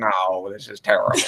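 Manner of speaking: deflating, downbeat, gloomy pessimistic voice. Retelling how he would answer pep talks, in Squidward voice. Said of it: "in his Squidward voice".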